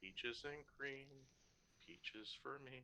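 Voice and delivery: whispered under breath. A man strums his guitar as they all walk; whispering under breath. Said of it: "whispering under his breath".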